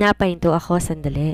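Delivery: ordinary delivery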